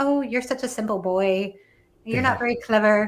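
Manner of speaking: put-on patronizing, condescending talk-down voice. Quoting characters in the book: imitating condescending characters. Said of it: "I just love how condescending they are too".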